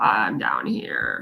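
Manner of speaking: bottomed-out vocal fry, low, hushed, breathy. Speaker explaining vocal fry, demonstrating the lowest part of the range with vocal fry. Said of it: "it's like the lowest part of your range".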